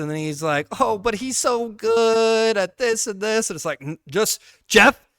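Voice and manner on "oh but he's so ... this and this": mock passive, slow, high sugarcoating, good drawn out. Complaining about Jeff, the speaker mimics him: imitating Jeff sugarcoating. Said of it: "very too sugarcoaty and he's like very passive".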